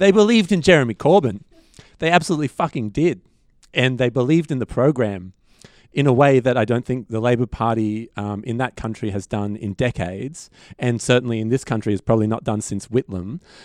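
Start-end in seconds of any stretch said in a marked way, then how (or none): 0.0-3.2 emotional, swept up mid-sentence, voice climbing higher. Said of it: "now I'm getting emotional".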